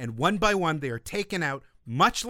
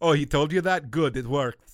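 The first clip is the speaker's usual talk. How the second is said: put-on Austrian accent. Retelling Arnold's answer in a behind-the-scenes clip: weird Arnold Austrian accent. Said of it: "my Austrian accent is weird and nonsensical".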